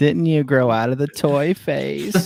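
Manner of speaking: disappointed spouse-like voice. Speaker jokingly voices Katie as a disappointed wife, imitating Katie, disappointed. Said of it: "I'm doing that voice for Katie".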